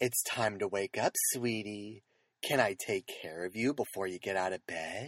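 very low, soft, gentle, lulling, soothing voice. Speaker imagines an alarm app that wakes you up: soothing voice. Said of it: "pick like a soothing voice and it says like".

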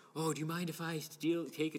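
put-on meek, overly polite Canadian accent. Acting out a visitor asking to use the ATM: imitating a timid Canadian manner. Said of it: "in a very Canadian, timid manner".

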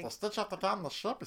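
pinched-throat, very high creature voice. Showing how a Yoshi voice resembles Stitch: Stitch voice. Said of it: "like Stitch before Stitch".

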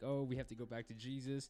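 ordinary delivery

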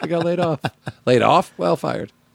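put-on sad actor voice. Acting out an actor telling friends he was fired: sad Eric Stoltz impression. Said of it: "I can do a real sad Eric Stoltz".

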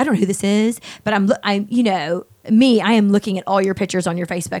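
ordinary talk

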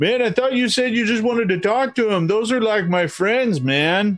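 mock high, agitated, upset yell. Voicing Frong from the background: Frong yelling at the priest. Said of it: "he's yelling this at the priest".

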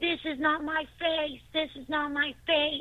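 acted-out, high, enraged screaming outburst. Recalling screaming at their own reflection in the mirror: retelling a scream at the mirror. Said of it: "scream at the top of my lungs".

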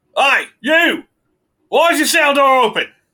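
very high, very loud, drawn-out holler. Voicing a guard who calls out about an open cell door: prison guard voice. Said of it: "you hear a voice at the end that goes".

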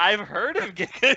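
acted, very slow, doubtful, unsure questioning tone. Teasing another speaker by repeating how Jason said a line: imitating Jason sounding unsure. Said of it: "you were questioning yourself as you were saying it".

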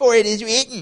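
high, loud, mocking smarty-pants taunt. Imagining how Satan quoted scripture back to Jesus: Satan's mock smarty-pants tone. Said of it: "Satan with his little smarty pants comment".

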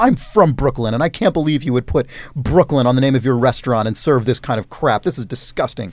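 normal talking voice

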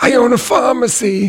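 very high, squeaky, little cartoon voice. Asked to do more cartoon voices, the speaker does a Mort impression. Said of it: "it's me, Mort".

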